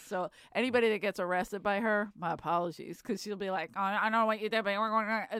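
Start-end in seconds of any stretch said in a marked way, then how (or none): 3.7-5.4 rattled off at top speed, rushed. Speaker imitates a woman who talks real fast when arresting people: imitating fast talking. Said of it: "I don't know why she talks real fast".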